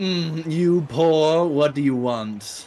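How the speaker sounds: haughty, snooty tone with slow drawl. Voicing Vornak taking bets from a player: snooty, nose in the air. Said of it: "he sticks his nose up".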